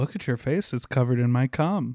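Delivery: ordinary talk, nothing marked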